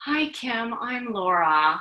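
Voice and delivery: put-on composed, steady, calm comforting voice. Retelling how Laura answered her tearful call, imitating Laura's calm, cool voice. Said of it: "she just said in this calm, cool voice".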